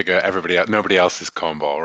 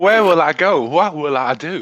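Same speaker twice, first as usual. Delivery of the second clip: put-on American Southern accent, higher and louder; 10 semitones higher, 4 dB louder than usual. Joking about English speakers doing American accents: Scarlett O'Hara voice. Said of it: "do the Scarlett O'Hara end of it".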